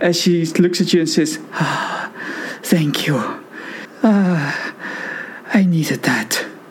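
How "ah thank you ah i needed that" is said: purring in relief. Voicing a healed character thanking the healer: purring in relief. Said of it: "She almost purrs in relief".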